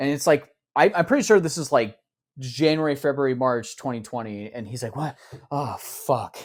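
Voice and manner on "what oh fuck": drained, exhausted, breathy near-whisper. Retelling a leaked video of Trump making a statement: imitating exhausted Trump. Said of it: "he's just, like, so exhausted".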